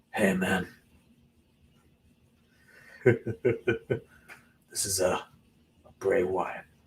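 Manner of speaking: hushed, soft, very slow drawn-out murmur. Attempting a voice because Ray wasn't available, in a Bray Wyatt voice. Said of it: "I attempt to do a Bray Wyatt voice".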